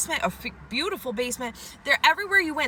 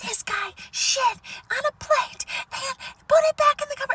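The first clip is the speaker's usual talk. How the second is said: very high, urgent scream-whisper; 13 semitones higher, 3 dB louder than usual. Speaker retells what a woman said at an estate sale; retelling a scream-whisper. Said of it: "she was like scream whispering".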